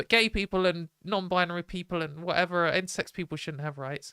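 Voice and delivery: ordinary talk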